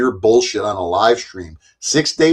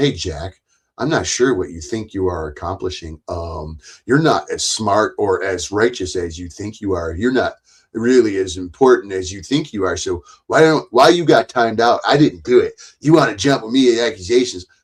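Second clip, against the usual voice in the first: ordinary talk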